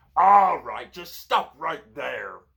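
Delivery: very loud, high-pitched, snarling goblin voice. Reading an adventure gamebook aloud, voicing one of the goblins, snarling. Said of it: "one of the goblins snarls".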